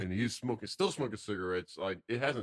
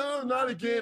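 mock very high-pitched, loud shriek; 5 dB louder than usual. Speaker retells a man swinging at his mother, imitating a mother screaming. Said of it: "She screams".

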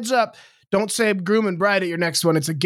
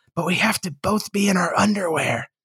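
put-on whispering child voice. Retelling a story of a child leaning in close: imitating a child's whisper. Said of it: "he leaned in and whispered real close to me".

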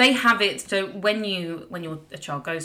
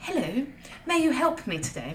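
exaggerated, silly fake posh voice, high and swooping; 8 semitones higher than usual. Retelling placing an order at a counter in an exaggerated put-on posh voice. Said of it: "I just started using a stupid posh voice".

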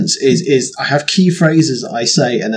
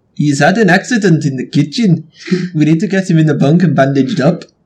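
practised, put-on South African English accent; 4 semitones higher than usual. Practicing an accent in front of others: South African accent. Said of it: "South African accent".

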